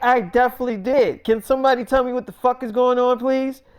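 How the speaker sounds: mock thoroughly upset, insistent, demanding tone. Retelling a story, imitating an upset Millie Bobby Brown. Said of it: "she's thoroughly upset".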